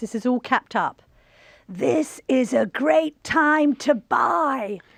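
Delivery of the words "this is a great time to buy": put-on very slow, drawn-out, pitched-up, heavily congested stuffy voice. Reading out an all-capitals post: Donald Trump with a heavy cold. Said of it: "He sounds like Donald Trump when he's got quite a heavy cold".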